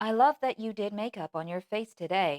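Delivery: artificial soundboard computer voice with odd lilt. Showing how to sound artificial with lilts in odd places: artificial soundboard voice, odd lilt. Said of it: "just put a lilt where it doesn't belong".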